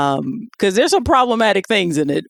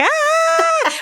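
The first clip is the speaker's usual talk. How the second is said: acted, very high, shrill, long stretched shriek. Retelling a movie scene where a woman discovers something: imitating a scream. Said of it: "she screams, like".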